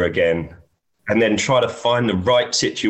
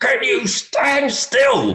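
very high, light, on-edge put-on yelp. Retelling how Paul shouted at the marshal who kept moving: imitating Paul shouting. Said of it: "he's shouting at this guy".

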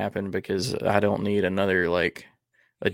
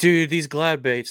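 mock breathless, amped-up gushing, high and winded; 7 semitones higher, 4 dB louder than usual. Acting out how the listener sounded about their fishing day: excited and winded. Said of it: "you sounded like so excited. You were almost like winded".

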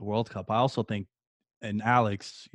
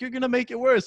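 high, very high-pitched yell; 4 dB louder than usual. Speaker recalls his mom scolding him for jumping on his broken leg: retelling mom's yelling. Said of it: "My mom's yelling at me like".

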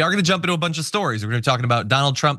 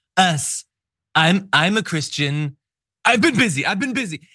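nervous, higher, flustered, stumbling over words; 5 semitones higher than usual. Mocking a clip just played, imitating Donald Trump sounding nervous. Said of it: "nervous that he knows he should be criticized".

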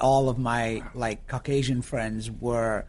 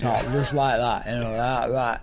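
Bradford Yorkshire northern English accent; 3 dB louder than usual. Speaker from Bradford demonstrating the accent he grew up with, in a northern English Yorkshire accent. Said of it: "I used to have this northern accent like that".

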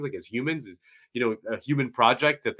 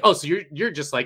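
plain

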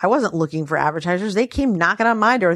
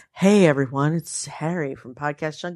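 smooth-as-silk, relaxing, silky smooth voice; 3 semitones lower than usual. Imitating a podcast host with a silky-smooth voice: imitating Harry's silky-smooth voice. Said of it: "a voice that's smooth as silk".

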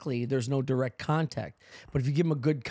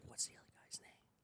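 soft, unvoiced whisper. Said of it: "I whispered to my girl".

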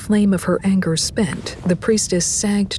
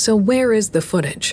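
plain

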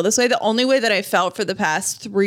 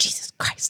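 put-on muttering under breath, quieter. Retelling what the other speaker said: imitating muttering under breath. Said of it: "under your breath, you go".

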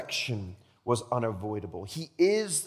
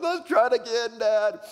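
put-on weepy child voice, crying, high and slow; 9 semitones higher, 5 dB louder than usual. Telling a story of a boy learning to swim, the speaker imitates him crying. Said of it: "he comes up like crying".

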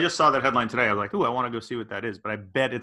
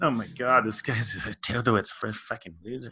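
quieter, put-on mocking giggle and mutter under breath; 4 dB quieter than usual. Acting out people mocking you as you try to unload albums, mock giggling under breath. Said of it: "giggle under their breath at your bullshit".

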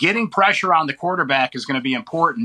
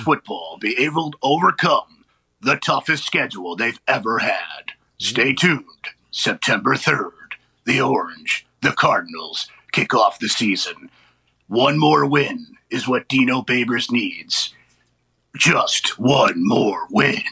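epic, dramatic movie trailer announcer voice; 3 semitones lower than usual. Talking football with Pat, previewing the team's season: movie trailer voice. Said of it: "I'll do this in my movie trailer voice".

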